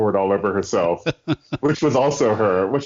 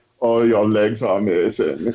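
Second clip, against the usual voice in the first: put-on German accent, slow. Imitating her doing all the voices as she writes, in a German accent. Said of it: "she is talking with a German accent".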